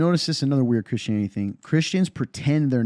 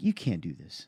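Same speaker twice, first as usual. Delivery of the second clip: cool, even-keeled, very calm low voice; 5 semitones lower, 8 dB quieter than usual. Recounting what they said after the game to a woman with a league role, retelling a very calm remark. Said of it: "That calm".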